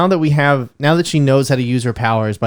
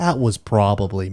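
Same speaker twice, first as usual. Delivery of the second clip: put-on soft, low American accent, dropped into the throat; 3 semitones lower, 5 dB quieter than usual. Imitating a film character's line again: Benedict Cumberbatch impression. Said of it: "There you go".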